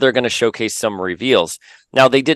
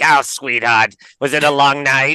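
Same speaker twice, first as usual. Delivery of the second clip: put-on gravelly, raspy New York accent; 4 semitones higher than usual. Act out what the woman said to you, in a raspy New Yorker voice. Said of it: "She was like this raspy New Yorker".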